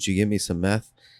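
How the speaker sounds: whispered voice. Retelling what a brother asked his sister after she brought food, retelling a whisper. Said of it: "he like whispers in".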